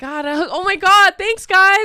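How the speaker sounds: very high, bubbly, gushing voice. Retelling how the new hire reacted to the cheering: imitating a bubbly new hire. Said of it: "so, like, bubbly".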